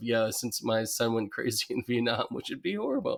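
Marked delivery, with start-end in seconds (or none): 0.0-2.3 mock deadpan delivery. Quoting the drawn character Joe's line: deadpan Joe voice. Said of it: "the deadpan delivery of".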